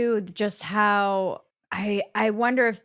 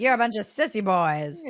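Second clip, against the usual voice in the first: impression of an old-school man's voice. Act out what a man was about to say after his spiel, imitating a man's old-school voice. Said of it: "just imitating".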